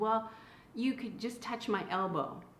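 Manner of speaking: ordinary talk, nothing marked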